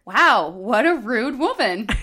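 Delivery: loud, carrying, deliberate delivery. Speaker retelling their remark about a woman who pushed through their carts, said very loudly. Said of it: "maybe very loudly".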